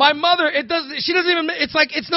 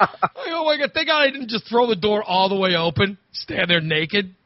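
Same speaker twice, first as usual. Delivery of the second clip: ordinary talk, nothing marked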